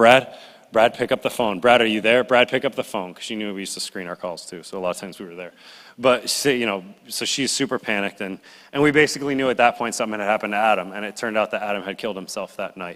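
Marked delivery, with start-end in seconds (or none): none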